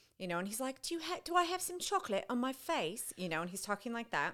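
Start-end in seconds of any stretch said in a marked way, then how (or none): 0.8-3.1 put-on British accent, much higher pitch. Retelling how he talked to their young daughter, somewhat recognizable british accent. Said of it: "he starts out in a somewhat recognizable British accent".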